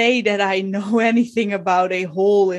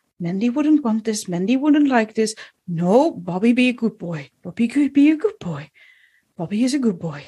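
quiet muttered whisper under the breath. Voicing a nervous young man muttering to himself: whispering under his breath. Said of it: "he whispers under his breath".

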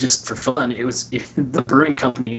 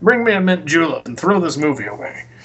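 put-on genteel Southern gentleman accent; 4 semitones higher, 3 dB louder than usual. Answering a teasing remark about being a Southern gentleman: Southern gentleman voice. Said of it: "the Southern gentleman decides to".

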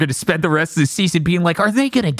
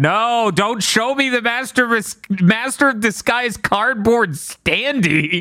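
hollering in a high, loud yell; 7 semitones higher than usual. Speaker retelling watching a show, retelling screaming at the screen. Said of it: "I'm screaming at the screen".

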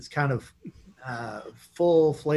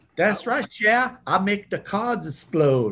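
put-on thick, heavy Cajun accent, pitched up; 7 semitones higher, 3 dB louder than usual. Mocking how Gambit is portrayed, laying on the gumbo accent. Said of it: "lay on that gumbo accent".

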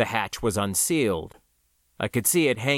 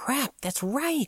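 hissed words, pitched very high; 14 semitones higher, 4 dB quieter than usual. Narrating a story, a character realizing something, hissing. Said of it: "she hissed".

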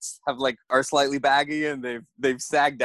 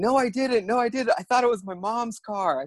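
mock shouting, pitched much higher; 8 semitones higher than usual. Retelling a man yelling back at the speaker in a shouting match, retelling a yell. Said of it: "And he's yelling at me".

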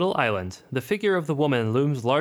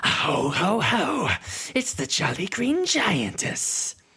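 high, snake-like hiss, pitched up; 5 semitones higher than usual. Narrating a story as a voice hisses in the listener's ear: hissing Kay Mallett voice. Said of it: "a voice in your ear hisses".

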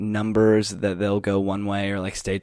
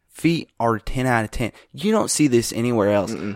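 bad, put-on fake Southern accent; 2 semitones higher, 3 dB louder than usual. Praising a lineman's feet like a football scout, fake Southern scout accent. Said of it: "That is my fake scout accent".

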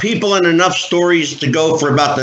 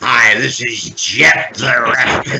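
measured, slow, unhurried, deliberate delivery; 5 semitones lower than usual. Showing the others the sister-in-law's impression: Jeff the Ref impression. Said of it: "does a great Jeff the Ref impression".

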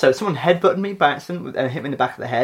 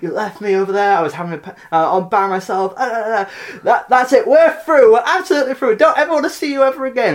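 mock shouting, much higher and louder; 8 semitones higher, 3 dB louder than usual. Speaker retelling his dad's girlfriend shouting at his dad at a gig, retelling a shouted outburst. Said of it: "she's shouting".

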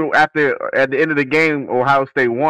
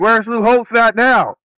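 put-on angry-sounding delivery, pitched higher; 8 semitones higher than usual. Retelling what someone said when mad at lou holtz: imitating someone mad. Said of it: "was mad at".

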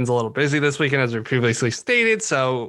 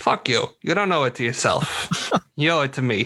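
put-on Boston-accented delivery. Host quoting movie lines ahead of a Good Will Hunting episode, Boston accent. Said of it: "That's my Boston accent".

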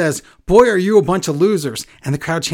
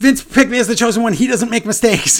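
mock angry, worked-up, high, boastful voice; 7 semitones higher than usual. Retelling Austin Theory's backstage line: imitating Austin Theory angry. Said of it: "Theory just gets all mad and he goes".

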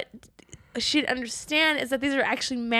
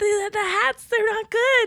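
screaming, yelling, higher; 10 semitones higher, 3 dB louder than usual. Acting out the factory manager holding up bad hats: screaming. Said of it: "So he's screaming Russian".

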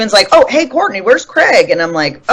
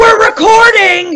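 put-on very high-pitched, shrill yell; 14 semitones higher than usual. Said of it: "yelling at me".

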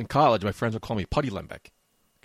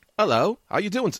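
very high, fumbled attempt at British accent; 10 semitones higher, 4 dB louder than usual. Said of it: "I lost it".

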